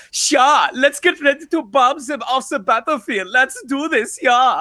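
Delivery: put-on Swedish DJ voice. Retelling an audition line, playing the role as a Swedish DJ: imitating a Swedish DJ voice. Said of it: "Swedish D J".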